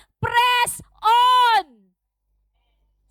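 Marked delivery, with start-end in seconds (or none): 0.2-1.9 loud, high-pitched, rousing, energetic shout. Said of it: "Sabi mo sa katabi mo".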